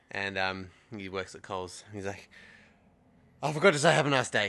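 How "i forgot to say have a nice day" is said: put-on, very loud, breathless, gasping, panting talk. Retelling a shop worker who ran to catch up: imitating someone panting. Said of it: "hands on his knees, panting".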